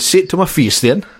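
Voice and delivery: put-on high Geordie accent. Retelling Martin Keown confronting a schoolboy who insulted him, in a Geordie accent. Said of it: "That was maybe a Geordie accent".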